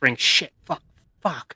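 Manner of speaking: breathy, hushed whisper under the breath. Retelling overheard whispers from people after an intimidation roll: whispering, imitated. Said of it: "I can hear them whispering".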